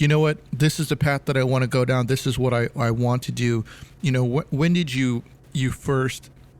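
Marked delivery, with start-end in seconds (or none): none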